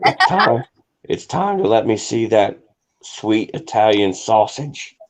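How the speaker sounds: slow, put-on stage whisper, very close. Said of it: "that guy was to whisper in your ear and be like".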